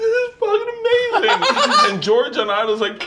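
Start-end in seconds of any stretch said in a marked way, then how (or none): 0.0-1.9 play-acted, very high, slow, drawn-out, tearful crying voice. Retelling a reaction to watching an episode: imitating Leanne crying. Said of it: "Leanne's crying, going like".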